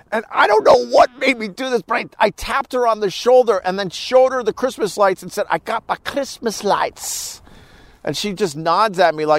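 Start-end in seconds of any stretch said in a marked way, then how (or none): 5.4-7.4 whispered, bad, put-on Scottish brogue. Retelling walking around a store: fake horrible Scottish accent. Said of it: "continuing up this fake, horrible Scottish accent".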